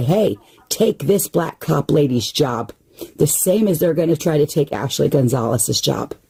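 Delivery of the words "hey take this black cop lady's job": ordinary delivery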